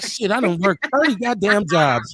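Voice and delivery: normal talking voice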